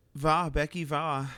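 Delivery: German-sounding voice. Cheering another player on before the game starts: sounding German. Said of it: "You sounded like, like, um, German".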